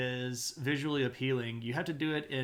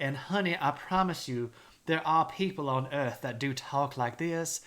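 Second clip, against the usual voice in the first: condescending, abrasive South Carolina accent. Showing how some people on earth really talk: condescending South Carolina accent. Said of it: "the South Carolina tea drinking accent ... They're the ones that just talk like this".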